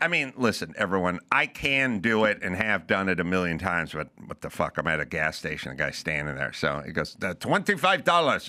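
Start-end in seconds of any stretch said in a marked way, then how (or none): 7.2-8.5 put-on thick Russian accent, laid on heavily. Retelling what the guy at the gas station said: thick russian accent. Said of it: "thick Russian accent".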